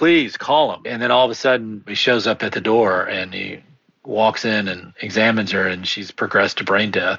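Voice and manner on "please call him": high, desperate, outright begging tone. Retelling begging someone to call the attending: retelling a desperate plea. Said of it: "I begged him".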